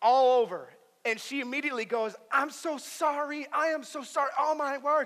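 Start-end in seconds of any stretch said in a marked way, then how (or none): 2.3-5.1 high, flustered, freaked-out, panicked voice. Retelling a woman who knocked her water over him, imitating a panicked apology. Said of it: "She was like freaking out".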